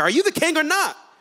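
high, challenging tone full of attitude. Speaker retelling the scene, voicing Pilate questioning Jesus, acting out Pilate's attitude. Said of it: "He's got a tone in his voice".

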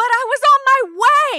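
very loud, high-pitched shriek, "my" drawn out. Retelling the reaction to a nurse's call about a father's death: retelling a scream. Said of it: "I screamed".

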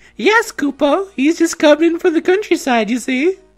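very high, squeaky fantasy creature voice. Voicing a game, the speaker answers Koopa as the Moogle: Moogle voice. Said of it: "Get ready for this voice for over 500 hours!".

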